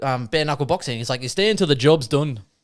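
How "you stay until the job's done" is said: put-on Irish accent. Quoting Brad Pitt's bare-knuckle boxer line from the movie Snatch: Brad Pitt pikey accent. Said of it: "And that's my pikey accent".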